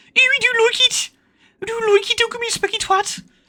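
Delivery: put-on Birmingham Brummie accent, very high pitch. Retelling what a dad would say: imitating dad in Brummy accent. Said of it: "but it was in a Brummy accent".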